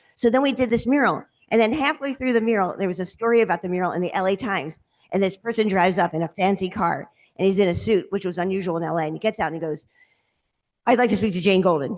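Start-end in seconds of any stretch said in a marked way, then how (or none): 10.9-12.0 play-acted, very stern, no-nonsense man's voice. Retelling how a man in a suit asked for her: imitating a very stern man. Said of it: "very stern".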